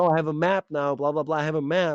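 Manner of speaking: high, boastful, show-off bragging voice. Retelling a stepmom showing off a map, imitating stepmom bragging. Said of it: "starts like showing off".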